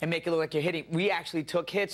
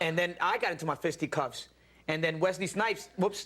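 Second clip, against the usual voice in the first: ordinary talk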